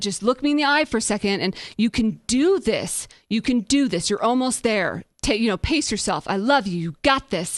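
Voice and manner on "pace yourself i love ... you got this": ordinary talk, nothing marked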